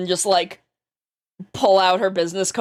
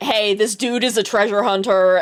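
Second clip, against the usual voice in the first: plain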